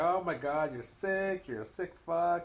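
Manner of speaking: mock, all-offended outburst. Retelling how a man reacted to a serious question, mock-offended. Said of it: "Jerry just got all offended".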